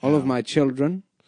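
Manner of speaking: put-on old Hollywood way of talking. Showing the way people used to say children: old-time Hollywood accent. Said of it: "the way they used to say children".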